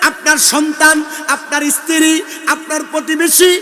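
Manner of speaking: loud, high, fervent, impassioned preaching.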